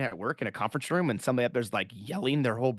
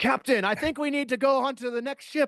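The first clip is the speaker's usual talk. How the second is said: very high, loud, announcer-like shouted delivery; 13 semitones higher than usual. Imitating Spock reporting to the captain: imitating Spock yelling. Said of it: "it just is loud".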